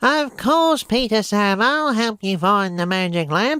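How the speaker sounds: pinched nasal voice, pitched high. Copying a voice someone uses for Harold, pinched nasal Harold voice. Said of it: "It's kind of like he's pinching up on his nose or something, kind of like this".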